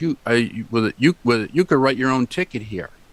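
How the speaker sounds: usual speaking voice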